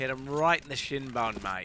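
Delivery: put-on Australian accent. Commentating on a shot to a co-commentator: put-on australian accent. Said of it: "wasn't trying to do Australian at all".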